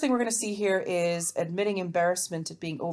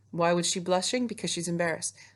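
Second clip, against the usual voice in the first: plain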